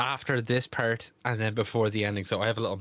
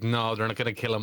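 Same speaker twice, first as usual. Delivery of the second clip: usual speaking voice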